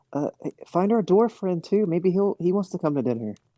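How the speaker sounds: high, carrying yell, calling out. Calling after friends who are leaving: yelling to departing friends. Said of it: "he'll yell to them".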